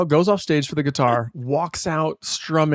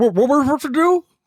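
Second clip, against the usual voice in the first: very high voice, talking through a full mouth; 10 semitones higher, 3 dB louder than usual. Picturing another speaker with a ladle and a mouthful: imitating Blake with a mouthful. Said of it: "Blake has a ladle and a mouthful. He's like".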